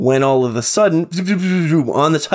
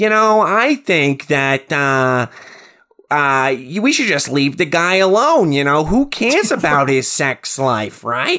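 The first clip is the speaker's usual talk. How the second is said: bad, wrong-sounding doll voice, done deliberately. Imitating the replacement voice of a killer doll: bad Chucky impression. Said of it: "the worst Chucky impression".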